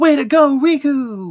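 very high, wildly swooping, insanely excited voice. Imitating Goofy's cheer for Riku: imitating Goofy super excited. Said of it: "he comes at that line with an insane amount of energy".

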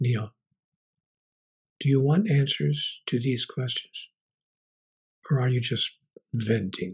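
gentle, hushed, very soft murmur. Speaker recounts a voice he heard when no one was there: imitating a very soft voice. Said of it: "a very soft voice that simply said".

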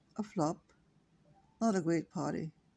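plain

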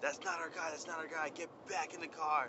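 high-pitched, urgent yell. Speaker retells a woman yelling at the police: retelling a yell. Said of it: "She yells at the police".

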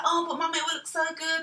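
high nagging voice. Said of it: "And she was like".

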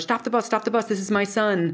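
mock urgent yell, called out loudly. Retelling how a woman on a bus yelled to the driver; retelling a yell. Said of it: "And she yells to the bus driver".

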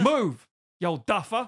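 loud, high-pitched shout. Joking about telling an old man to move: mock shouting.

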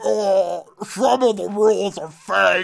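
silly heavyset man voice. Pitching a joke remake where the character is giant and fat, in a goofy fat Mello voice. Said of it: "his voice is just like".

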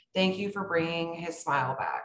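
ordinary talk, nothing marked

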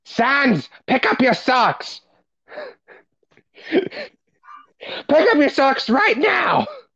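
very high, swooping, sing-song character voice. A speaker shows off a Papyrus impression, Papyrus impression. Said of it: "I can do a good a papyrus impression".

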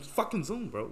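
wired eighties yuppie voice. Speaker mocks a way of saying Zoom, in a coked-up 80s yuppie voice. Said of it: "sound like coked up yuppies in the '80s".

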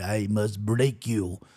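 very deep, soft put-on Russian accent. Quoting a russian fighter a kicker once faced: russian accent. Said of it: "that was a really good Russian accent".

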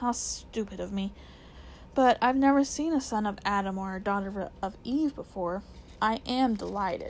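ordinary delivery, nothing marked

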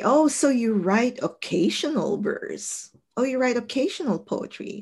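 condescending tone.

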